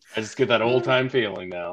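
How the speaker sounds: ordinary delivery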